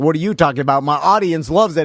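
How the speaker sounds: usual speaking voice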